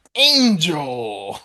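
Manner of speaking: video game announcer voice, word stretched out long. Recalling a video game announcer calling out a character's name: Tekken announcer voice. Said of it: "I thought of the announcer say".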